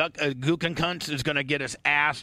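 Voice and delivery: normal talking voice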